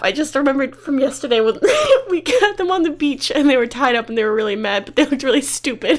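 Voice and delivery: talking through giggles. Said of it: "I didn't mean to laugh".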